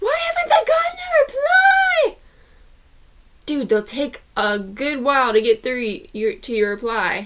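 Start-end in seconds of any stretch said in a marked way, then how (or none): 0.0-2.2 high-pitched panicked shouting. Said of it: "you're gonna be freaking out going".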